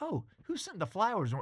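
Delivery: high, heavenly angelic-sounding voice. Retelling a voice heard from the hallway: imitating Amy's angelic voice. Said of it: "this angelic voice from the hallway".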